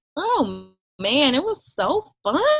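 heavily sarcastic, very slow, drawn-out delivery. Answering a question about the birth, rolling eyes: sarcastic. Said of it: "I'm being so sarcastic".

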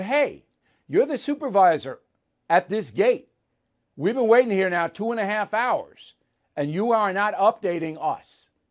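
heated, worked-up, confronting tone. Retelling confronting a gate supervisor about a long wait: retelling own heated complaint. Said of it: "Now I'm getting a little heated".

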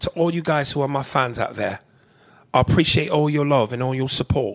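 put-on London accent, normal loudness. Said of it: "Here's how she sounds".

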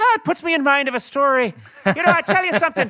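high, fast Belfast Irish brogue. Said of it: "he's always like".

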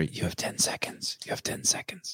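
very quiet, soft, breathy whisper. Joking about what gets whispered into a wife's ear: whispering. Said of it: "I whisper into her ear".

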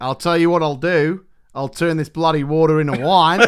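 put-on casual Australian accent. Joining the joke with lines for Jesus: Australian Jesus voice. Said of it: "The vision of an Australian Jesus".

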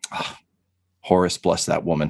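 muttering under the breath. A player speaking as his character, who is taken aback: muttering under his breath. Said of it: "he just mutters under his breath".

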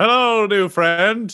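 high, slow, big drawn-out delivery.

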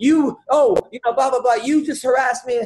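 mock high-pitched yelling, accusing rant. Retelling how a woman yelled at the speaker's dad; imitating a woman yelling. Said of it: "yelling at my dad".

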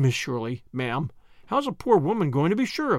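ordinary delivery

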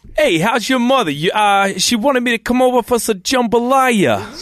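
high-pitched mixed Louisiana and Brooklyn accent. Lance, asked by the host for his best accent, does a Louisiana Brooklyn accent. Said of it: "I want your best Louisiana Brooklyn accent".

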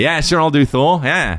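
deliberately bad, squeaky and loud. Imitating Chris Hemsworth agreeing to play Thor: Chris Hemsworth impression. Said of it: "What if that's how he sounded?".

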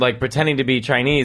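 ordinary talk, nothing marked

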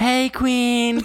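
flamboyant voice pitched way up high. Reading a message aloud in the role of Tony, in a flamboyant voice. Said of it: "you're hella flamboyant".

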